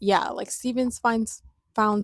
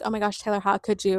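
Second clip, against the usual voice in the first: put-on upset voice. Retelling a scene where Belly gets upset: imitating Belly being upset. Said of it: "Belly gets, like, upset, and she's like".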